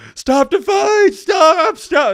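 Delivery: very high, loud, frantic, panicked shouting.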